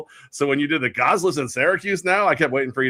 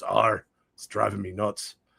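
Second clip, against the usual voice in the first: low, rough, salty sea-dog pirate voice; 5 semitones lower, 7 dB quieter than usual. Telling a joke about a pirate in a bar, giving the pirate's reply: pirate voice. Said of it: "The pirate goes".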